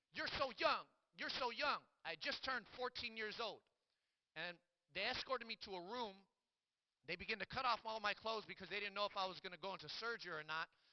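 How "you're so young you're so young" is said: put-on, high, screaming cry. Retelling a nurse coming out at the hospital: imitating a nurse screaming. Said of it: "she was screaming".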